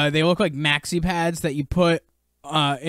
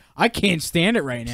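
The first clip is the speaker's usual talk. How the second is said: ordinary talk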